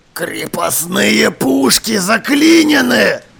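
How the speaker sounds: low, loud, snarling growl. Narrator reads the captain's line growled at the gunner: growling. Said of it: "прорычал".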